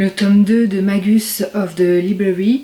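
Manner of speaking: bad English with French accent.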